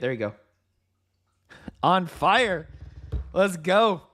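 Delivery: words bubbling with laughter, talking through laughing. Calling out a trade hitting its target to viewers, laughing while talking. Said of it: "Sorry, I'm laughing".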